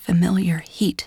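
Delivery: ordinary delivery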